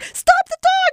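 high, loud yell mixed with laughter.

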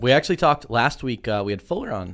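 voice breaking on the words. Host recalling last week's guest, voice cracking. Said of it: "my voice just cracked".

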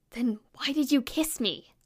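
hushed, leaning-in half-whisper. Reading a story aloud, a boy leans forward and asks quietly: half-whispering. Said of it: "leans forward and whispers".

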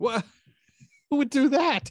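very high, loud, words broken by laughter, disbelieving. In a scene about finding a killer, laughing while talking. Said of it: "Why are you laughing?".

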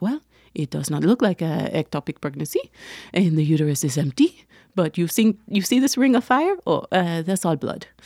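bad, failed, fake, put-on French accent. Retelling what the ultrasound technician said, in a bad French accent. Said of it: "I can't do a French accent, so I don't even know why I tried".

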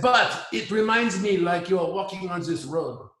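put-on thick French accent. Quoting what a French guy once said: heavy French accent. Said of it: "And I have very, very heavy French accent".

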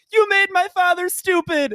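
very high, very loud, drawn-out tearful wail. Retelling a video of a little brother in tears: imitating a child yelling.

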